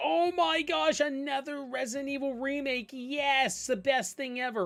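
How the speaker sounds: fan voice gushing over everything. Mocking brainwashed fans excited about a remake: imitating a brainwashed, gushing fan. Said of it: "your people so brainwashed that they're like".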